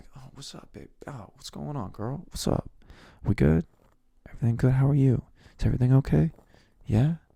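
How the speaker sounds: put-on sultry, seductive come-on voice. Demonstrating a put-on sex voice on a casual greeting: put-on sex voice. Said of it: "sex voice where it's like".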